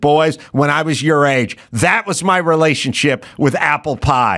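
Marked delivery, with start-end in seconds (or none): none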